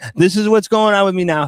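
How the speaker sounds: imitated hiccuping speech. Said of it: "I'm doing it and I'm going".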